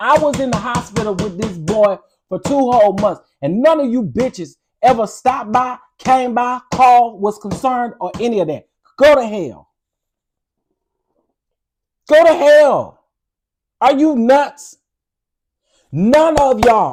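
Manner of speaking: getting angry and worked up. Speaker telling listeners about two months in the hospital with a nephew, getting angry. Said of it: "now I'm about to get pissed".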